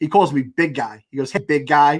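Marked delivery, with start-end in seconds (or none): none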